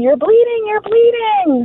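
mock screaming cry pitched very high. Retelling how friends reacted to the bleeding: imitating friends screaming. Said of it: "my friends are all screaming".

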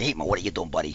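put-on New York style accent.

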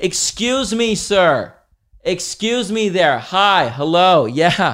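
loud, brash, obnoxious, attention-grabbing voice, pitched high. Retelling someone on a quiet plane calling the attendant over, mock loud and obnoxious. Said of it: "like so loudly and obnoxiously".

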